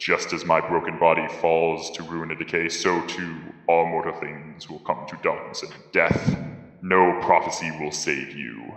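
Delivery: low, deep, reverberating, echoing otherworldly voice. A dying being speaks into the listeners' minds, in a deep echoing voice. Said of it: "deep voice that kind of echoes through your minds ... deep voice that kind of echoes".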